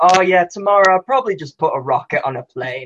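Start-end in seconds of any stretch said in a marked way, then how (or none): none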